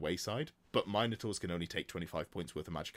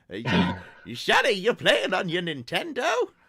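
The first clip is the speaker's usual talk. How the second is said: put-on very high, very loud, shrill doddering old-man voice; 11 semitones higher, 11 dB louder than usual. Joking about sounding old, playing a dad asking about a game; old man voice. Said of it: "I sound like an old man".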